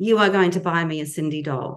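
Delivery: mock bossy, insistent, ordering voice, laying it down. Retelling what they told their father as a child: imitating own bossy voice. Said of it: "a bossy voice".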